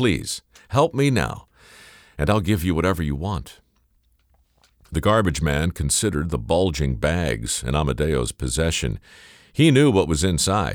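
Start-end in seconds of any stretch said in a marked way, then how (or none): 0.0-3.6 begging, pleading, imploring. Reading the story, the narrator voices Amadeo asking the garbage man for help, begging. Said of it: "he begged".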